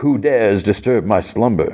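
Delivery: ordinary delivery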